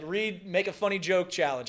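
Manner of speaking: plain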